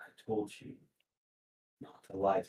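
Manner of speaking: cold, quiet, hushed whisper. Speak as a man lifting a frightened friend off the ground, in a cold, quiet voice. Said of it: "with a cold, quiet voice".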